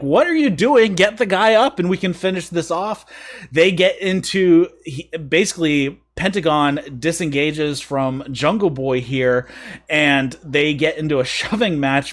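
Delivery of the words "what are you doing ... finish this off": fast, high-pitched yell, fired off quickly. Describing a wrestling match, one wrestler yells at another to get the guy up, retelling a yell. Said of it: "Blade starts yelling at him like".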